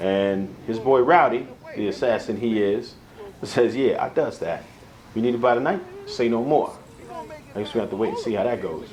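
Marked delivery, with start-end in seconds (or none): none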